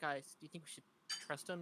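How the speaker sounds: low, hushed, whispered undertone. Going down the stairs, asking the group whether to trust him: low, hushed voice. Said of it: "In a low, hushed voice".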